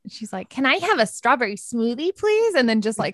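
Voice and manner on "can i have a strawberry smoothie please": high-pitched woman's voice. Retelling a woman the speaker still didn't like, doing an impression of her. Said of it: "that was a really good impression".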